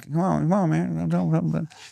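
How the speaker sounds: rough creaky voice. Doing an impression of an old politician: Joe Biden impression. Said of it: "this is my Biden".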